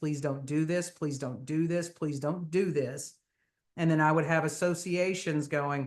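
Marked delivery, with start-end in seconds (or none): 0.0-3.1 put-on pleading, begging voice. Retelling how everyone was begged about the survey: retelling a plea. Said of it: "we were begging everybody".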